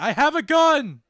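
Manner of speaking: high, shrill, booming, slow, drawn-out yelling. A character yells down an alleyway at two men walking past: yelling down the alleyway. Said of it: "That's when you yell down the alleyway".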